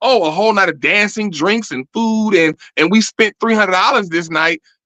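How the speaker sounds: plain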